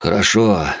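plain reading voice

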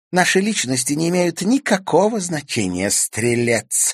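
very high, snide, mocking taunt. A girl stroking a cat adds a remark to Zverev, snidely. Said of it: "ехидно добавила девчонка".

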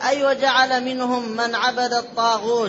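normal talking voice

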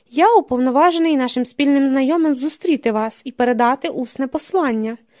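ordinary delivery

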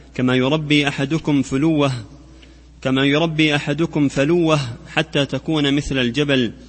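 normal talking voice

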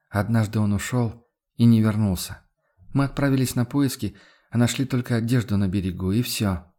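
ordinary delivery, nothing marked

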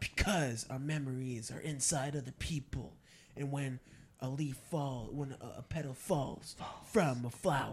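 slam poetry performance. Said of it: "the now slam poet".

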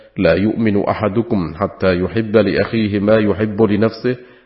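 ordinary talk

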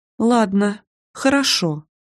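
timid, shy, meek. Narrator reads her own first-person reply to Dima, timid. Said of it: "робко кивнула".

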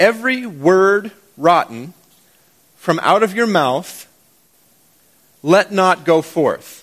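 very slow, careful, word-by-word reading. Reading a verse in word order so listeners can catch it: slow, careful reading. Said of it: "I'm gonna do it slowly so you can catch it".

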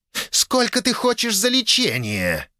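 very high, snarling, growled delivery. Reading a fantasy scene with a dragon lady, the narrator voices a character, growled. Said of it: "прорычала Долине".

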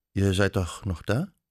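ordinary delivery

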